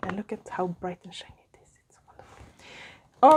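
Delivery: soft, hushed whisper.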